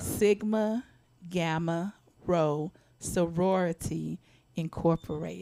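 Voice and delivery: slow, careful, deliberate delivery. Repeating the other speaker's sorority name properly, slow and deliberate. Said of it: "say that slow again now".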